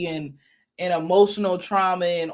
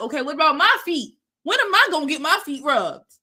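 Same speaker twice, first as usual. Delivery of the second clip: put-on pitched-up boyish voice, a boy's, not a grown man's; 8 semitones higher than usual. Acting out how a boy partner answers about rubbing feet: imitating a boy partner. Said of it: "A boy would be like".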